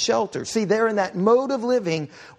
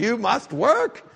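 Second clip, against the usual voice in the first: English with a heavy, put-on German accent. Quoting a Bible line the way Scott says it: imitating Scott's German accent. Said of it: "in a German accent several times".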